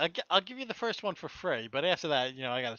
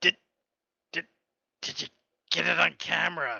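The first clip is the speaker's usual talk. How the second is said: put-on dying man voice with breaths. Acting out the clown character Patches in his dying breaths: imitating a dying man. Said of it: "that's me doing Patches, like, dying".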